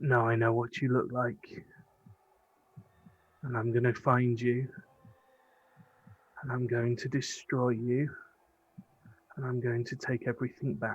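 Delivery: hushed whisper. Voicing a character who threatens a nine-foot lich: whispering. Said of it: "he just sort of whispers up and goes".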